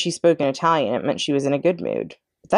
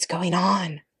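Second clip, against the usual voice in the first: true half-whisper with no voice; 4 dB quieter than usual. Tucker Mouse peeks out from behind a Kleenex box to Chester: half-whispered. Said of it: "whispered Tucker Mouse".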